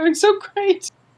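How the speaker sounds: voice cracking very high at the end. Acting out a character's line after describing it: voice cracking. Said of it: "her voice cracks as she says the last part".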